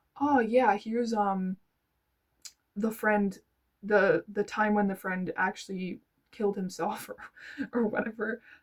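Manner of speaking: laughter breaking into the words. Describing a lead-in she wishes had been used, laughing while talking. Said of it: "Um sorry for laughing".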